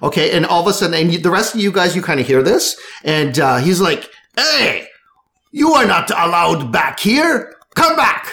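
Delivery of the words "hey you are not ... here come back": angry, high, deliberate voice. Game narrator voicing a character who spots the players somewhere forbidden: angry character. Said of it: "he is angry".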